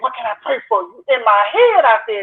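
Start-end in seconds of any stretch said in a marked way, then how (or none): 0.0-1.0 hushed, soft whisper. Retelling what the girl on the prayer team asked: imitating someone whispering. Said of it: "So she whispered and said".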